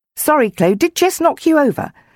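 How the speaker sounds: amused, very high-pitched voice. The boy chasing his dog asks the girl it knocked over, grinning. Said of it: "the boy chasing the dog grinned".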